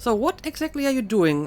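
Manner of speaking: ordinary talk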